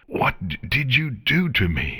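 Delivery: injured-sounding, strained voice. Narrating Chrysalis asking once again after failing to transform, strained and injured voice. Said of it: "in a strained and injured voice".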